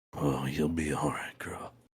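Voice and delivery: airy, breathy, raspy, scratchy, very hushed murmur. Imitating a man talking to a horse, breathy, scratchy voice. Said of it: "he just was way too breathy and like scratchy".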